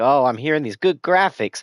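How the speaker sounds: thrilled, eager dog voice, high and loud. Speaking for the excited dog while showing game graphics: voicing Coco the dog. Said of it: "Even Coco over here is excited, like".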